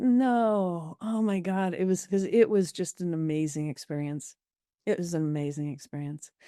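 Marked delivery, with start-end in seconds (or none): 0.0-1.7 put-on very slow tearful crying, drawn-out no. Retelling waking up after a near-death experience, imitating own crying. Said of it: "I woke up just crying".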